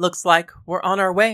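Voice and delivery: plain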